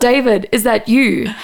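put-on Afrikaans-accented speech. Retelling a paranormal investigation video, an investigator calling out: imitating a strong Afrikaans accent. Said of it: "two guys with very Afrikaans accents going".

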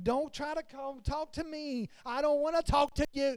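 acted irritated, frustrated, fed-up, dismissive tone. Telling listeners how they get when tired, acting out being frustrated. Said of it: "I get tired and I get frustrated".

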